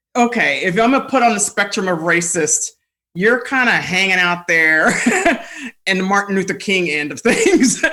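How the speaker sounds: teasing, laughing throughout. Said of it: "And I'm like".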